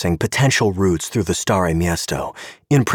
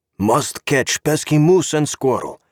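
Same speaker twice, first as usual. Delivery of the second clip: exaggerated caricature Russian accent, pitched up; 7 semitones higher than usual. Joking with a friend in a car, Boris Badenov Russian accent. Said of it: "said in his best caricature of a Russian accent".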